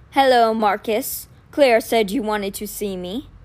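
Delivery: very deep, bassoon-like, gravelly wolf voice. Narrator reads a wolf arriving at the door to greet his host, deep gravelly wolf voice. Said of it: "The wolf's gravelly voice was as deep as a bassoon".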